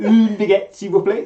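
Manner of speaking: French with Welsh accent. Showing the French phrase one knows: French in a Welsh accent. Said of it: "I say it with a Welsh accent".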